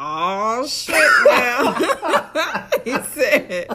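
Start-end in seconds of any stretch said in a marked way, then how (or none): 0.0-0.9 loud, exclaimed, put-on country accent. Retelling a man's reaction on seeing Justin outside the rental car: country accent. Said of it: "let me get my country accent".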